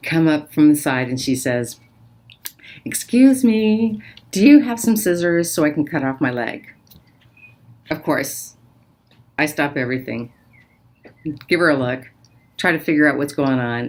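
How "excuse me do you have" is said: light, high, playful little voice. Retelling how a woman came up in the dark, imitating a playful woman. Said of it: "I hear this little playful voice of a woman".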